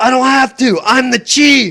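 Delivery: very high-pitched yelling. Retelling what the chief said to the cop: imitating someone yelling. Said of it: "That's what he yelled".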